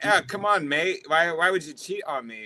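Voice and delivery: playful put-on UK accent. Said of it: "like, a U K accent".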